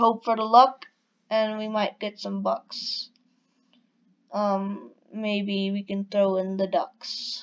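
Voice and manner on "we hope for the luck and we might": usual speaking voice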